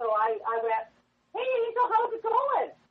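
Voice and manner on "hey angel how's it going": put-on light, young, cheery voice, much higher. Retelling how she greeted Yvonne by her nickname, the speaker uses a put-on light cheery voice. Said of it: "I lightened my voice and sounded cheery".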